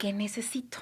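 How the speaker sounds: soft, unvoiced, quiet whisper.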